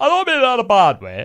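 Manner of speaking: very high-pitched, put-on northern English accent. Quoting granddad's follow-up remark to the speaker, imitating granddad's northern accent. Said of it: "in his northern accent".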